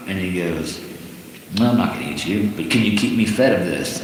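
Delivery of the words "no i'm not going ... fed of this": ordinary delivery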